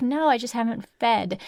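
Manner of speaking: plain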